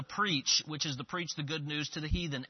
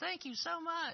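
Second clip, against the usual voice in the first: tiny, very high, soft squeaky voice; 14 semitones higher, 5 dB quieter than usual. Retelling what a man who was handed a track said, in a tiny Mickey Mouse voice. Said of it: "in the smallest little Mickey Mouse voice".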